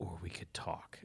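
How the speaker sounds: very quiet, low, underplayed growl, barely audible. Quoting a villain's threat to a girl: imitating Viggo Mortensen's low growl. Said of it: "But it's all just real low. It's like a growl".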